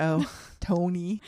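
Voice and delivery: put-on mimicked Minnesota accent. Echoing another speaker's reading: imitating a Minnesotan accent. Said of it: "You said that like a Minnesotan".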